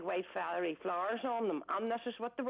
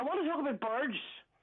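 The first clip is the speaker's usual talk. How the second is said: angry, aggressive, higher; 6 semitones higher, 3 dB louder than usual. Answering why they want to talk to Geordie: aggressive. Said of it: "You sound very ag-".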